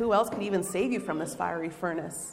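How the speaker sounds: ordinary delivery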